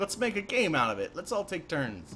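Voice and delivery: very excited, enthusiastic, high-pitched and swooping voice. In a game, voicing a character who proposes everyone take turns, super excited. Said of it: "he's all like super excited about it".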